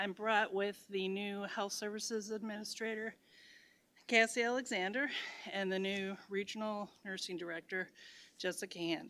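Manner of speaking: winded, short of breath. Introducing two new staff members to the board, out of breath. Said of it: "Sorry, I am out of breath".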